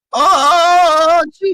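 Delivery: very high cartoon voice, stretched "oh" going way up. Showing how a cartoon character sounds: Morty voice. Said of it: "Morty is very, like".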